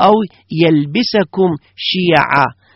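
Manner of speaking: usual speaking voice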